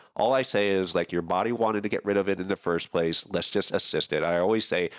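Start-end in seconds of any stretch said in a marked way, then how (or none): none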